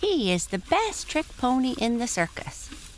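high, swooping, whinnying laugh through the words. Tiny Tim answers Tinkle's question about Prancer, speaking with a laughing whinny. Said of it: ""Oh, it's lots of fun," said the pony on the left, whose name was [name]. / cried [name] with a laughing whinny".

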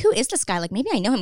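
ordinary talk, nothing marked

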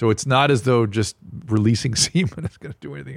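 words broken up by laughter while talking. Explaining to another speaker how the infection spreads, laughing while talking. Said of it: "sorry for laughing".

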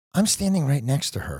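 plain

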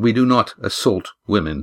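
ordinary delivery

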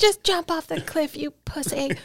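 very high-pitched, screaming yell. Retelling a friend yelling to jump: imitating someone yelling. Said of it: "She just yell at you until you hit".

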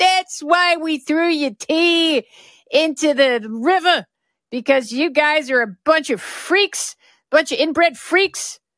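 put-on Boston accent. Talking about the royal family, do a revolutionary-times masshole impression. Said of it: "That's my masshole impression from revolutionary times".

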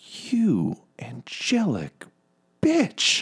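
very high-pitched, nasty, horrible tone. Speaker voices the woman whose fingers you just hacked off, in a horrible quiet voice. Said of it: "in her like horrible quiet voice".

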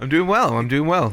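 upbeat, happy, cheerful and content tone. Answering how they are doing today: sounding happy. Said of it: "You're sounding so happy".

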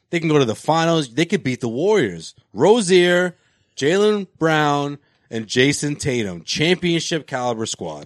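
ordinary delivery

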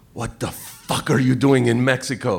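mock, put-on broken English. Retelling what a man asked them in Mexico, imitating broken English. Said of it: "the guy's says in broken English".

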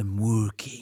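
deadpan, dead serious, very low, hushed voice. Asked what he is doing, Andy looks up from his laptop: imitating Andy, dead serious. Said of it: "dead serious".

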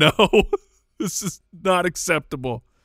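acted, laughing, half-yelled, mild yell. Retelling what she shouted while laughing, imitating laughing while screaming. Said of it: "So she's laughing. And just screaming".

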